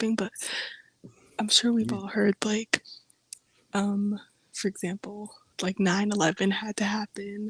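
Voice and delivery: hushed, low, quiet voice. Speaker talking while people nearby are sleeping, talking low. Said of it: "sorry if I'm talking low".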